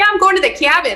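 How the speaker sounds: put-on Minnesotan accent, pitched very high. Retelling a chat with a coworker about the cabin: Minnesotan accent. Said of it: "I catch myself all the time now".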